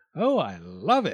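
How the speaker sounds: very slow, drawn-out crying out. The fox sees his new tooth carried up by the dentist's wife and exclaims. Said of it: "exclaimed the fox".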